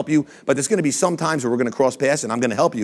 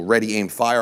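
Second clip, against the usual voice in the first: plain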